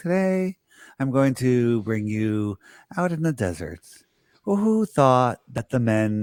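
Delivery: very slow, deliberate, drawn-out speech. Recommending a video maker's weekly videos, slow-talking John Levy impression. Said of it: "He talks real slow like this".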